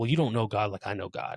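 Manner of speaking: ordinary talk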